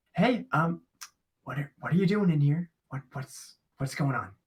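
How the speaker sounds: halting, stumbling speech. Speaking in character to people nearby, in very hushed tones. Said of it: "I'm just gonna speak in very hushed tones".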